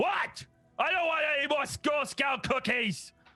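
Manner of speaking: very high, yelled, shouting troll voice. Voicing a big green troll who opens the door: troll voice. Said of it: "there's a big green troll there, and he just goes".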